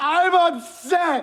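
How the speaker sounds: very high, loud, forced-out yelling. Ordered again to say it louder: louder, raised voice.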